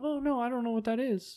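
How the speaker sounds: put-on soft, high girlish voice. Retelling chatting with a man while passing as a girl, in a fake girlish voice. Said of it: "I like how your voice changed".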